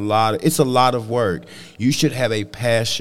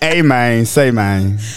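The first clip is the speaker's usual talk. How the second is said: louder, with North Memphis accent; 7 dB louder than usual. Repeating a phrase after another speaker's request: North Memphis Frazier voice. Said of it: "in your best North Memphis Frazier".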